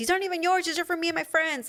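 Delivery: high-pitched, rapid-fire yelling. Describing a TV scene where a woman yells at a drunk bar patron, retelling a yell. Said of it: "And she's like yelling at him".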